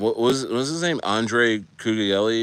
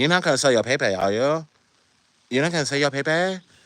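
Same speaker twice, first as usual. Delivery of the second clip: imitated Chinese accent; 4 semitones higher than usual. Quoting an imagined chinese girlfriend asking her partner a question, in a chinese accent. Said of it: "laughing at your Chinese accent".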